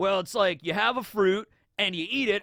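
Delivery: talking like a beach surfer. You act out a henchman's very brief explanation of devil fruit, in a surfer dude voice. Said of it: "I don't know why I'm talking like a surfer dude".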